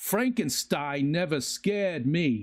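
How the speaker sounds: very slow, deliberate celebrity voice, each word weighed. Retelling a Christopher Walken impersonation that someone does. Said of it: "this guy does a Christopher Walken im-, im-, impersonation".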